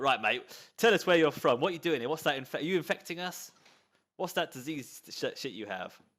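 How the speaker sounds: hard, threatening, menacing tone. Voicing the leader pointing a gun at the escort: threatening gang leader. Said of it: "the leader gets his gun out and he points it at the guy and he's like".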